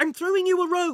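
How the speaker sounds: loud shout pitched very high, ringing. A boy calls down to Kate at the bottom of a hole, yelled. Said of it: "he yelled".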